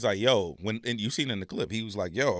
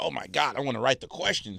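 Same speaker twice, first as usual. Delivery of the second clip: put-on eager, all-worked-up, quick excited gush; 3 semitones higher than usual. Retelling how Jeremy reacted to writing the questions: imitating someone excited. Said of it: "'cause Jeremy got all excited".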